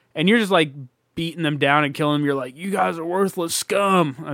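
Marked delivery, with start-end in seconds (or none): 2.6-4.4 slow put-on cowboy drawl, "scum" stretched out. Gamer describing beating grave robbers down, telling them off in a cowboy voice. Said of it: "That's my fucking cowboy voice".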